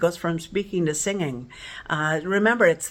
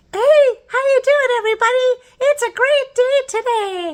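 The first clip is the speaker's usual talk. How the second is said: very high, bright, loud character voice; 9 dB louder than usual. Teaching the calling register by talking like Elmo: Elmo voice. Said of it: "talk like Elmo. So Elmo says".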